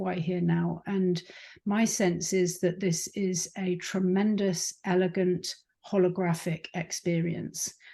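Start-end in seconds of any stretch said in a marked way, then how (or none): none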